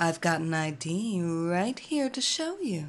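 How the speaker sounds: seductive, sultry, low voice. Narrating Evelina showing her ID to a bouncer, in a sultry voice. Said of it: "said in a sultry voice".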